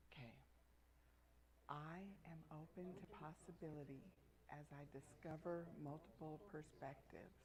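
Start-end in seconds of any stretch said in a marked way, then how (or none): 1.7-7.3 soft whisper, breath only. Leading a group affirmation, saying it the first of three times: whisper. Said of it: "first in a whisper".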